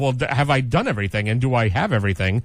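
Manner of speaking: ordinary talk, nothing marked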